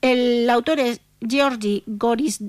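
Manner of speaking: slow, careful, syllable by syllable, spelled out.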